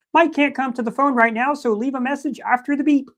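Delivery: very high, cartoonish frog puppet voice. Recording a voicemail greeting for Mike as a gift, Kermit the Frog voice. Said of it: "a voicemail from Kermit the Frog".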